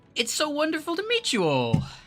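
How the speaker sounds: excitable, excited put-on character voice. Speaker announces they have to do an excitable put-on voice. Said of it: "I'm gonna have to do a excitable voice".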